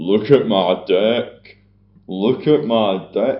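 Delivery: loud, very slow, drawn-out cheering. Retelling a movie scene, quoting a character in Fat Bastard voice. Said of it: "I'm doing a fat bastard Austin Powers impression".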